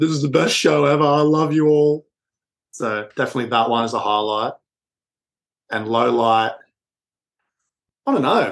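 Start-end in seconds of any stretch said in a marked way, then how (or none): 0.0-2.1 mock drunk slurring, higher pitched. Recalling what they told the encore crowd on the mic, retelling a drunken slur. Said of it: "I slurred the words like".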